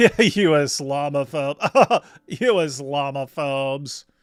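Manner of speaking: very slow, condescending drawl. Mocking how dawa fans talk down to critics, mock-condescending tone. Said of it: "say it in a completely condescending way".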